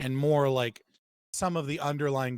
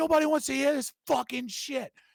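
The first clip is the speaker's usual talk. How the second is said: mock, shrill, very high-pitched screeching scream; 13 semitones higher than usual. Retelling a New Yorker screaming at a street preacher: imitating someone screaming. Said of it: "screaming at him".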